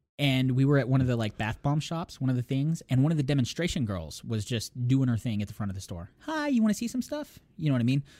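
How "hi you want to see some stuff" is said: put-on very high, sweet girl voice. Retelling a demonstration girl at the front of a store, in a sweet, nice girl voice. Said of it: "Sweet, nice girl voice".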